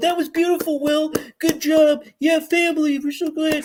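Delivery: high-pitched, weepy, tearful gushing. Mocking people who cried after someone's apology, imitating someone crying. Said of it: "started crying and going".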